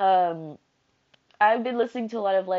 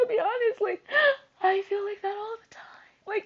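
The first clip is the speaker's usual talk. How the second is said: high, tearful voice with crying breaking through. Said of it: "I'm gonna start crying again".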